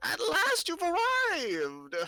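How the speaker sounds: dry, crackling, very high, drawn-out voice. Narrating a woman peering into a crystal ball greeting the arrivals, crackling voice. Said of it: "her voice crackles like dry weeds".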